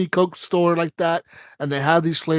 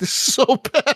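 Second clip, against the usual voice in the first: put-on, high, teary lament through crying; 8 semitones higher than usual. Retelling how a kid reacted to a bitter soda: imitating someone crying. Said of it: "she started crying".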